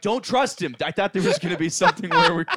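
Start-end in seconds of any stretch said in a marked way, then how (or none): 0.0-0.8 shouted, higher and louder. Retelling a warning about a character while watching the films: imitating yelling at the TV. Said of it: "You're yelling at the T V".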